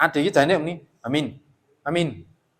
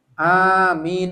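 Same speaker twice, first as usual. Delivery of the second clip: loud amin, both vowels held long; 3 semitones higher, 4 dB louder than usual. Explaining how to say amin aloud in prayer, drawn-out loud amin. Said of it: "Bacaannya A panjang, mi panjang gitu. ... Dan keras".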